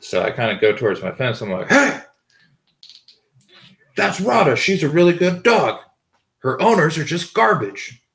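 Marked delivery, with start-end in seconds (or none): 1.7-7.9 loud yelling voice. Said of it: "I yelled that".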